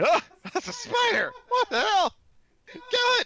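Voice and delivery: shrill, very loud, high, panicked goblin squawk. Voicing a goblin spotting a spider: alarmed goblin voice. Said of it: "This goblin's like".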